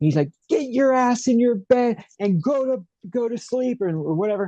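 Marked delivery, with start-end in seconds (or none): 0.5-3.8 shrill, high-pitched screaming. Retelling how his dad answered him at night: imitating his dad screaming. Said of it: "he just starts screaming at me".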